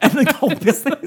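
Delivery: mock high, loud commercial ad-read voice.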